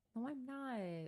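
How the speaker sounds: high, soft, whiny little voice. Teased as a bratty bottom, denying it in a whiny voice. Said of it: "Saying that in the whiniest voice you can".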